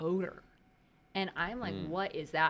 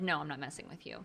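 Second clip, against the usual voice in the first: earnest, dead serious, no-joke delivery; 3 semitones lower, 5 dB quieter than usual. Retelling the other speaker's denial of messing around: imitating a dead serious tone. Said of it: "you looked at me so dead serious".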